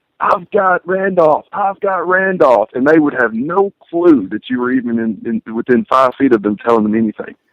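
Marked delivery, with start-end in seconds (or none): 0.2-2.7 put-on shouting, stretched and high. Retelling calling out a matchup to a teammate in a loud arena: imitating yelling at a teammate. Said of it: "yelling at them".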